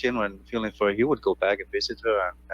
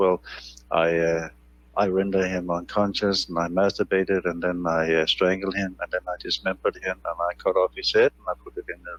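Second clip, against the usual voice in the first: put-on flat, monotone delivery; 2 semitones lower than usual. A speaker quotes what another man said, imitating a flat monotone. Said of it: "in a monotone voice he says".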